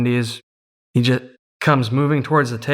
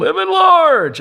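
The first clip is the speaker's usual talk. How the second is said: put-on top-of-the-lungs, full-throated yell, very high; 5 dB louder than usual. Retelling how a player ran to the table: imitating someone yelling. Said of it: "at the top of his lungs every single time".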